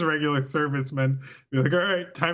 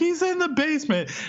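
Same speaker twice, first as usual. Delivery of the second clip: mock shrill, very high, frantic alarm-like cry; 12 semitones higher than usual. Acting out a teenager's call to police about a killer: imitating a frantic 911 caller. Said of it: "making a frantic nine one one call".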